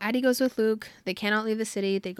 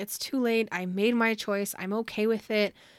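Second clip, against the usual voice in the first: usual speaking voice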